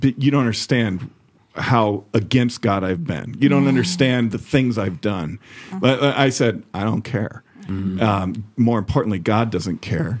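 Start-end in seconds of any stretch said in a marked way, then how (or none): none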